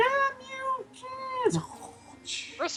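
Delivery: put-on bloodthirsty character voice. Retelling what the player character said: imitating a bloodthirsty character. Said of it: "my character felt a little bloodthirsty".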